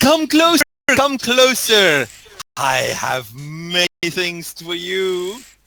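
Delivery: effusive, eager, exuberant merchant voice, high-pitched. Voicing a gem trader calling customers closer: exuberant gem trader voice. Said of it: "the gem trader with all of his exuberance".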